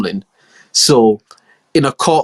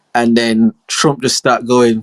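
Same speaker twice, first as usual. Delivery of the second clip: normal talking voice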